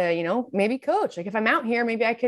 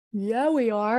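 yawning while speaking. Co-host agreeing while welcoming listeners to the show, yawning while speaking. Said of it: "as I'm yawning".

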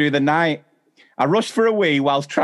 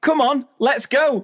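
very high, squeaky calling shout; 10 semitones higher than usual. Retelling calling to her non-existent dogs while running past a family, high-pitched shout. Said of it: "in a high-pitched voice to my non-existent dogs".

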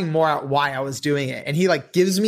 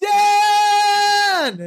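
mock full-lung yell, very high, stretched long; 4 dB louder than usual. Retelling suddenly yelling a name from the audience: retelling a yell at top of lungs. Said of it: "yelling at the top of my lungs".

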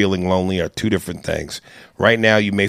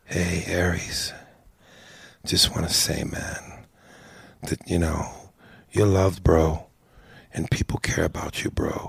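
whispery, low, breathy, sultry R&B-style murmur; 2 semitones lower, 7 dB quieter than usual. Quoting a man's voicemail message to him, in a real low voice. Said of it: "he talks in this real low voice".

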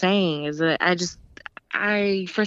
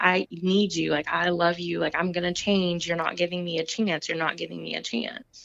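mock tearful, crying, begging voice, quieter; 6 dB quieter than usual. Retelling what a man said crying on his knees, imitating him crying and begging. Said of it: "he's like crying on his knees to me".

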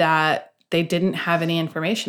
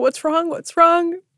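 mock, high-pitched yelling repeated over and over; 12 semitones higher, 4 dB louder than usual. Retelling what a husband kept saying on the phone: imitating someone yelling. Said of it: "he just kept yelling".

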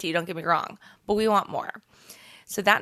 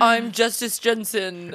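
put-on dumb guy voice; 3 semitones higher, 3 dB louder than usual. Showing how another person imitates the speaker, in a dumb guy voice. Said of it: "same as every other dumb guy voice".

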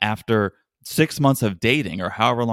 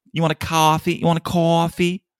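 put-on deliberately affected New York accent, pitched high; 7 semitones higher than usual. Retelling how Stacey offered a coffee, imitating Stacey's put-on New York accent. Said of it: "she was putting it on".

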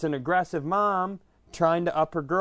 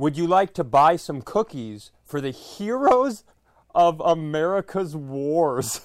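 loud, slow, acted out, "wars" drawn out; 4 dB louder than usual. Retelling how a woman spoke to you, retelling her loud question. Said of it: "she loudly goes".

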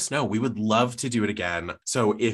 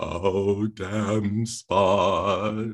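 mock grand stage-tragedy wailing. Recalling the last actress seen playing Lady Macbeth: imitating Lady Macbeth wailing. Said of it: "just wailing".

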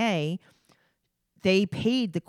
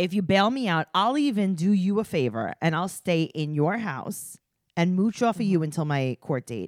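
usual speaking voice

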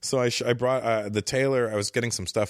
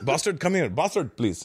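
put-on Indian accent, higher; 4 semitones higher than usual. Retelling calling people in India names: put-on Indian accent. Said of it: "picking up the Indian accent".

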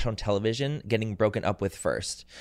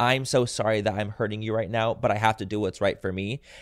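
put-on crying, tearful pleading voice. Retelling a partner's breakup words, imitating someone crying. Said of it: "literally crying, being like".

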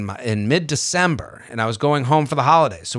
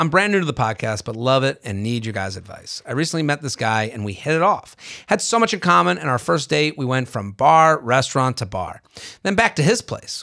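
usual speaking voice

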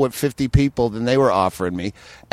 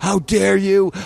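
put-on furious man's outburst, higher; 6 semitones higher, 3 dB louder than usual. Retelling a confrontation at a bar in Montreal: imitating a livid man. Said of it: "he was fucking livid".

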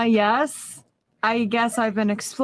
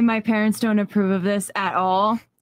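ordinary delivery

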